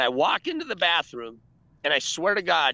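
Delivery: ordinary delivery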